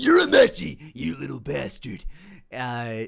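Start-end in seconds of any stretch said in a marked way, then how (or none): 0.0-2.0 gruff, loud, rough anime-style tough-guy voice, pushed forward. Recounting the voice he prepared for a character: Kuwabara voice. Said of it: "the character I was, you know, ready to do was Kuwabara".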